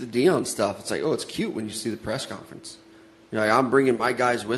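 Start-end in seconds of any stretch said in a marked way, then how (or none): none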